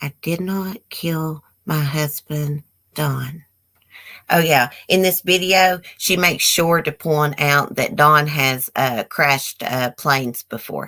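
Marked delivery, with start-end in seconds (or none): 0.0-3.4 unvarying, trance-like, same-level monotone drone. Imitating how Julie always talks: Julie's flat monotone. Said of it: "She's always talking like this".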